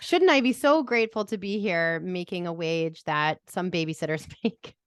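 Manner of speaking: sarcastic, faux-grateful tone. Complaining about being paid thirty dollars an hour, sarcastic. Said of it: "I'm saying that with sarcasm".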